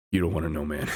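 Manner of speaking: very low, deep muttered words. Retelling a friend's reply to a joke: imitating Madge muttering under his breath. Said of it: "Madge just under his breath goes".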